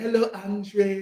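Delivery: put-on Haiti-accented speech. Telling a friend about a girl from campus, quoting her: French Haitian accent. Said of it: "she had the French Haitian accent too".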